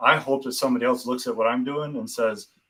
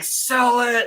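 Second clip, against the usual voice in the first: imitated screaming, higher pitch; 12 semitones higher, 4 dB louder than usual. Retelling watching a show with family: imitating own screaming at the TV. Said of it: "screaming at the T V".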